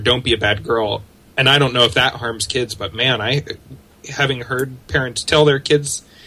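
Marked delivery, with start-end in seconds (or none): none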